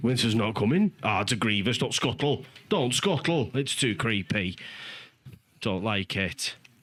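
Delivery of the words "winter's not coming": put-on northern English accent, mildly startled and surprised. Joking about the climate, attempting a northern accent with a hint of surprise. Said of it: "the northern accent with a hint of surprise".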